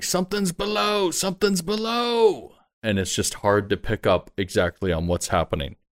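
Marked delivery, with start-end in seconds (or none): 0.0-2.5 screaming and shouting, yelling out, higher pitch. Voicing men on the ship warning of something below: screaming and shouting. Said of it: "just shouting out".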